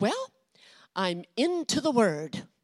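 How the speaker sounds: put-on swooping voice of a very old woman. Retelling a FaceTime call, imitating mother's 84-year-old voice. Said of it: "That was my mother's eighty-four-year-old voice".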